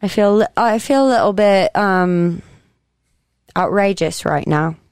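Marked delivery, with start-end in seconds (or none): 0.0-2.4 fake British accent for laughs. Trying on cheap wigs with friends, speaking in a put-on British accent. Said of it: "maybe I should have a British accent with this".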